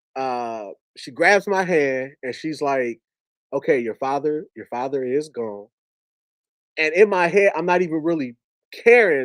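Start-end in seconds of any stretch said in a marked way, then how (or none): none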